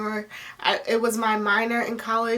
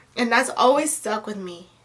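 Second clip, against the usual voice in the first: ordinary talk, nothing marked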